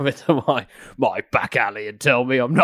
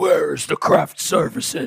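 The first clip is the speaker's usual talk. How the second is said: rough, creaky, put-on caped-hero voice; 4 semitones higher than usual.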